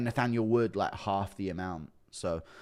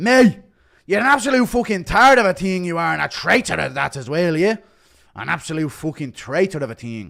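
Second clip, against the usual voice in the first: very loud, pitched-up bellowing tirade; 7 semitones higher, 10 dB louder than usual. Criticising Jake Matthews, in a McGregor impression. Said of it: "McGregor criticising Jake Matthews' impression".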